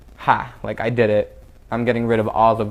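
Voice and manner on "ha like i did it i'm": usual speaking voice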